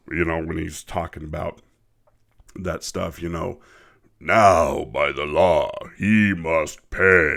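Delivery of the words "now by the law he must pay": powerful, very deep, very slow booming voice. Quoting a character's line from the original version, in a very deep voice. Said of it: "has this very deep voice".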